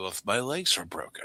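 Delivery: calmest possible deadpan, totally unbothered, no pain audible. Retelling a movie scene in the basement: imitating Matt McCoy's calmest voice. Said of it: "in the calmest voice ever".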